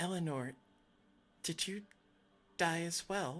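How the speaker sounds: quiet whisper. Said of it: ""This is a whisper."".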